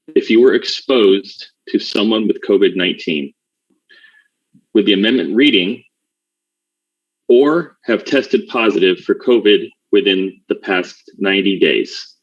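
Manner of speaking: measured, slow, deliberate, slowed-down delivery. Rereading the motion after being asked to: talking slower. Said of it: "I can talk slower as well".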